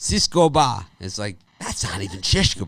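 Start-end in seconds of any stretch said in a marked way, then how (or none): 0.0-0.8 put-on heavy Spanish accent, pitched up. Imitating someone selling shish kebabs on the way to the game, heavy spanish accent. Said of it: "with a heavy Spanish accent".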